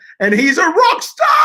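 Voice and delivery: high, loud excited cheer.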